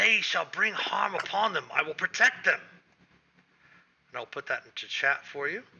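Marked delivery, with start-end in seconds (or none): 0.0-2.6 hissed, furious, archaic-sounding elf voice. A game master voices an elf who has spotted the players, as an angry hissing elf. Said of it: "the elf hisses angrily in strange archaic Elvish".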